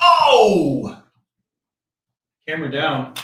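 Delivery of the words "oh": sudden, very loud, drawn-out "oh" yell. Closing the show, the host suddenly yells out to viewers, a sudden yell. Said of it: "Sorry to yell at you guys".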